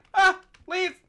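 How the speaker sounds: very loud, high, frantic freak-out yelp. Player startled by shulkers in Minecraft, freaking out. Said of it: "Why are you freaking out?".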